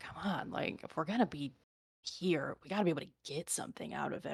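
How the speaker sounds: barely audible, very quiet mumble under the breath. Voicing intruders searching a bedroom: muttering to themselves. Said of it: "you kinda hear them muttering to themselves".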